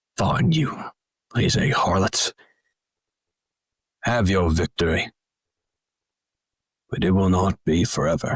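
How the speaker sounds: complaining, grumbling voice. Narrating a story as the guards sheathe their weapons and answer, grumbling.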